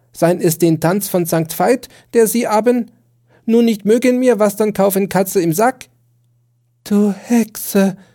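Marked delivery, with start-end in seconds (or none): 6.9-7.9 gasping for breath, much higher pitch. First-person narrator answering the other speaker, gasping for breath. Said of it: "sagte ich nach Atem ringend".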